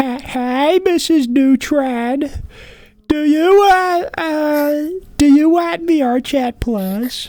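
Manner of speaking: very high, drawn-out character voice. Showing another speaker a cartoon impression on request: Carl Wheezer impression. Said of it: "Do you wanna hear my Carl Wheezer impression?".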